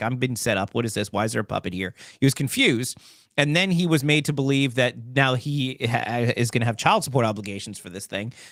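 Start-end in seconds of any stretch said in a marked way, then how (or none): none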